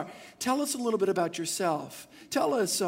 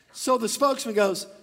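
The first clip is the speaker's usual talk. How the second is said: ordinary talk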